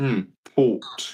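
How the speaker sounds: put-on posh, upper-crust English accent. Retelling a scene where Angus tastes port: imitating Angus's posh English accent. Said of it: "he says with the posh English accent".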